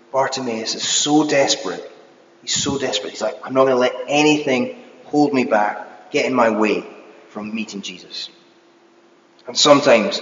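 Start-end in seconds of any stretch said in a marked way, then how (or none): none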